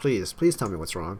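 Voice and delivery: ordinary talk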